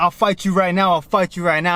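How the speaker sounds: plain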